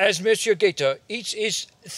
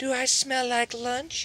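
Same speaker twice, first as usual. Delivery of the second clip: syrupy, sugary sweet voice; 4 semitones higher, 5 dB quieter than usual. Reading a story aloud, the skunk teasing the alligator: sugary sweet voice. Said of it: "asks in a sugarcane voice".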